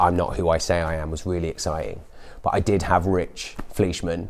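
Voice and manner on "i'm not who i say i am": normal talking voice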